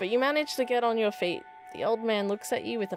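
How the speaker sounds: plain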